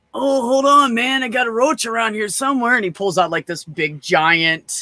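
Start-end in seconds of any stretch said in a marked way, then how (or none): 0.1-2.7 put-on stoner voice, pitched higher. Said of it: "every time somebody does a stoner voice".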